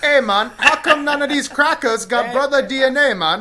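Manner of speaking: high, slight put-on Jamaican accent. Teasing a friend whose african accent drifted, the speaker answers in a put-on jamaican accent. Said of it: "do a little Jamaican".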